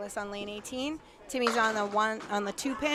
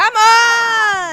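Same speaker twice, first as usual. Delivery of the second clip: very high, very loud shrill yell, "on" drawn out; 12 semitones higher, 18 dB louder than usual. Reacting as a bowler misses a beautiful triple: yelling into the microphone. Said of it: "Sorry, I yelled in the, in the microphone".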